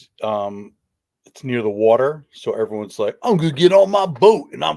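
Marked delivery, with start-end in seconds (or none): 3.2-4.8 put-on, loud, pitched-up New Jersey accent. Mimicking neighbours near the water: imitating a Jersey accent. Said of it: "that's a perfect Jersey accent".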